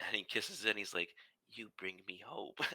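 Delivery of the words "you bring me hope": hushed, soft, private half-whisper. Retelling how he speaks to his old mushroom, away from everyone: half-whispering. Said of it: "he whispers into the mushroom".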